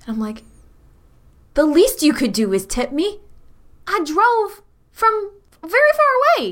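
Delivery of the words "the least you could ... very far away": appalled, aghast, very high, swooping sing-song whine. Voicing a courier character refused a tip by the client: in character, aghast. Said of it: "I look, like, aghast at him".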